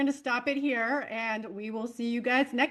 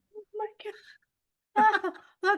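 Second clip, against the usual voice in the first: talking while crying with laughter, higher; 9 semitones higher than usual. Trying to speak through an hour of cracking up: laughing to tears while talking. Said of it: "I have actual tears".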